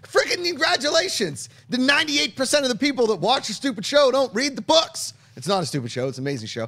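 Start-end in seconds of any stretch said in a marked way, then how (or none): 0.1-5.1 very high-pitched, shrill shouting rant. Reacting to news of a fifth series, yelling. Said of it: "Sorry I'm yelling".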